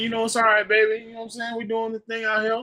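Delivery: easygoing, relaxed put-on Louisiana accent. Imagining how Token would talk, imitating Token with a Louisiana accent. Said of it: "surprised that Token don't be like".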